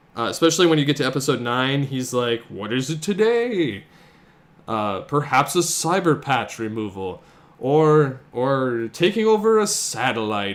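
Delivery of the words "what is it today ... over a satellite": slow, sing-song, mocking sarcastic villain voice. Recalling episode nine, the speaker quotes Megabyte mocking the sorcerer: sarcastically. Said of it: "Megabyte was very sarcastic with the sorcerer".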